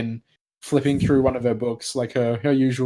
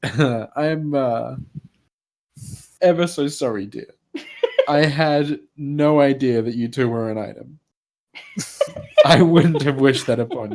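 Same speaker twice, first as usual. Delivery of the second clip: voice barely holding back stifled laughter; 3 dB louder than usual. Narrating a scene to the group, voicing a woman who speaks up, stifling laughter. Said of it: "tries really hard to avoid laughing".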